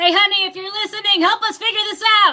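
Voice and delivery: loud, high-pitched yell, calling out across a distance. Calling out to someone listening for help deciding names: yelling. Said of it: "I didn't mean to yell".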